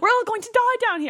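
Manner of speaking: attempted British accent. Trying the line in a British voice: attempted British accent. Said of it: "I can't do a British voice".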